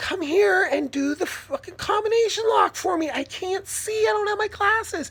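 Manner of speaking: mock, very high, shrill, all-out scream. Retelling begging the neighbor kid for help: imitating someone screaming. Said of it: "Fucking screaming at this kid".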